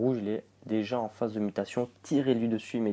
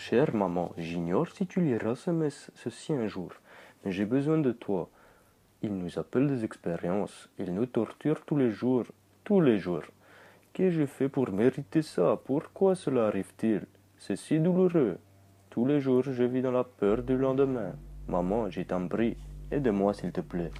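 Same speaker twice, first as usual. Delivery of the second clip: put-on Russian accent on French words. Reading aloud a letter to a mother, written in Russian, in a put-on Russian accent. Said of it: "J'espère que vous avez kiffé ce petit accent russe".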